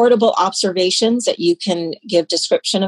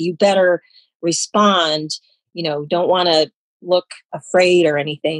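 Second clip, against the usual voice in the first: normal talking voice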